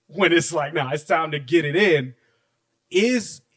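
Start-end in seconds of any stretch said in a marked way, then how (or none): none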